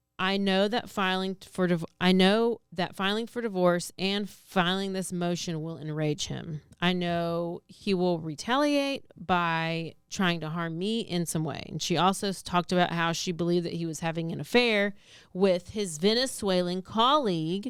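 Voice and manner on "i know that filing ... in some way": normal talking voice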